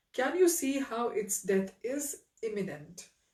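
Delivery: plain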